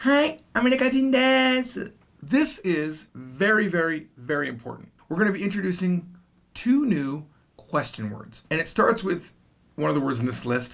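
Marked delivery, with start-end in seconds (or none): 0.0-1.9 put-on higher, cute, girly voice. Showing learners how to answer a question in Japanese: cute girl voice. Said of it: "I'm saying it like a cute girl voice".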